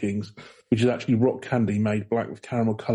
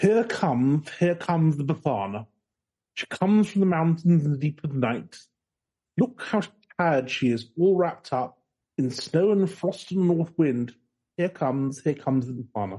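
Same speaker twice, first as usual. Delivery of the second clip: upper-class English recital voice, pitched up; 5 semitones higher than usual. Reading a poem aloud on request: posh English accent. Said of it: "can you do it in a posh English accent for me?".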